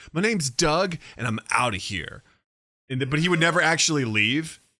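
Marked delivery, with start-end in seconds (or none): 0.2-2.3 put-on angry comic voice, slower. Describing a favorite obscure sketch character: mock-angry Doug impression. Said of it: "constantly getting mad".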